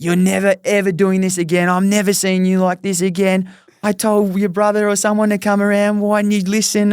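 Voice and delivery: loud, high-pitched screaming. Retelling how Jess screamed at him after the cold shower: imitating someone screaming. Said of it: "She's screaming at me".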